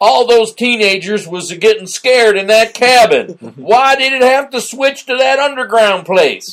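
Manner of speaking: very high, loud put-on old drunken Southern man voice. Recounting people's opinions of a film, in an old drunken southern man voice. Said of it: "I don't know why I'm doing that voice".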